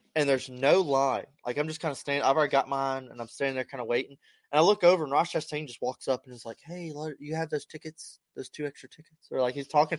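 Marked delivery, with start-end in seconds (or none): 6.7-9.3 very quiet, hushed whisper. Retelling running into Ross Chastain while waiting, imitating Ross Chastain whispering. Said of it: "because he was, like, whispering".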